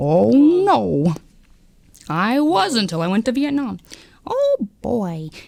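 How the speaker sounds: slow, drawling cartoon voice, stretched-out "no". Answering another speaker's remark about Goofy, in Goofy voice. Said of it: "I thought Goofy was wholesome".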